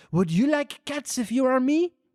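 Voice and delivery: put-on high, squeaky mouse voice with a French accent. Reading Alice aloud, the mouse answers Alice about cats, Ratatouille-style French mouse voice. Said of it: "This is like Ratatouille".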